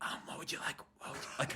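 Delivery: whispered, barely audible, very quiet, breathy. Imitating how a coworker takes customers' orders; imitating him speaking quietly. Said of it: "he'll be quiet".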